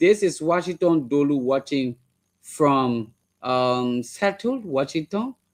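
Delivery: plain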